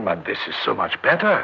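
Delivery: plain reading voice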